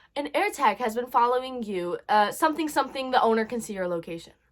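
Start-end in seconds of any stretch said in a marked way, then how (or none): none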